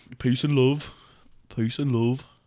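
Liverpool accent impression. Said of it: "Is that a good [name]?".

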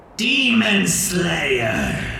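high, raspy croak of a dying bird. Narrating a game, the speaker voices a scarred bird in a dying, raspy bird voice. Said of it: "croaks out at you in this bird's, like, dying, raspy voice".

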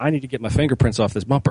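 ordinary talk, nothing marked

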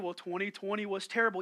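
gloomy, glum cartoon donkey voice. Acting out a talk with a gloomy Eeyore: Eeyore voice. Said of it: "y'all remember Eeyore from Winnie the Pooh?".

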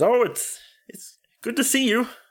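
high croaky frog voice. A tiny man greets someone in the story; Kermit the Frog voice. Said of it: "reminds me of Kermit the Frog".

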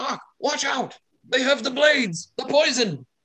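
very high, frightened, dismayed shout. Storyteller voicing a character who cries out to another, fearful yelling. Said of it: "shout out in dismay and fear for his life and just starts yelling".

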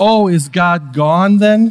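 mock, very slow, very drawn-out sarcastic jab. Retelling how a woman yelled from the back of the room: imitating a sarcastic tone. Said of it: "In kind of a sarcastic tone".

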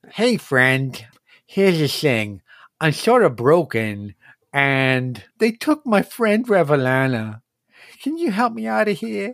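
voice of a small creature. Voicing a little creature that asks the players for help: voicing the little creature. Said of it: "It looks up at you and says".

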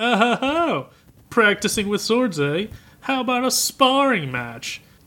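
smug, very high-pitched taunting tone. Retelling a scene where the prince offers a sparring match, imitating smug Prince Daida. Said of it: "Just real smug".

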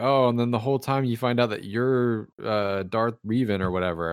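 ordinary delivery

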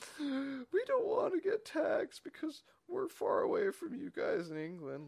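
put-on high, slow, whiny baby voice.

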